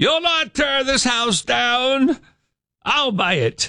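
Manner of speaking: put-on very high, old-timey 1920s woman's voice. Imagining a woman in the 1920s standing before the wrecking ball, in a 1920s woman's voice. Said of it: "That's how she sounded back in the 20s".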